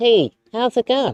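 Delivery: very high, loud puppet voice through a covered mouth. Speaker demonstrates how Muppet voices are done: covered-mouth Muppet voice. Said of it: "when they do their Muppet voices, they usually cover their mouth".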